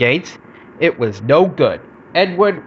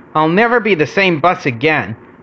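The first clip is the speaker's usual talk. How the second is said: ordinary delivery, nothing marked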